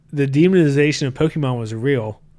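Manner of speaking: plain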